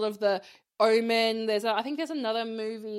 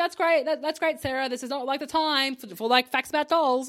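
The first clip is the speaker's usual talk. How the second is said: sassy, dismissive brush-off delivery; 3 semitones higher than usual. Retelling how Sam brushes someone aside: sassy Sam voice. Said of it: "sassy Sam".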